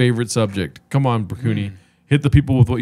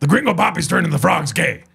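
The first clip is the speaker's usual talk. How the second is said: put-on ranting talk-show voice, higher; 6 semitones higher than usual. Answering a request for an impersonation: Alex Jones impersonation. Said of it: "Can you say Gringo Papi is turning".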